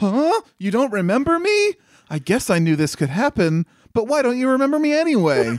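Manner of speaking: very high, bewildered, swooping sing-song voice. Mocking a character who forgot her Digimon: imitating Sora. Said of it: "still she's like".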